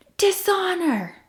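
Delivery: high, loud shrieking scream.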